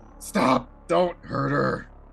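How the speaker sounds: rough, creaky, raspy pleading, very slow. Acting out a voice in a described scene: rough raspy voice. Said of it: "a really raspy voice is gonna be like".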